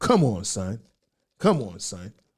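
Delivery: slow, stretched-out delivery, each word drawn out. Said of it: "I sound like, uh, [name] right now".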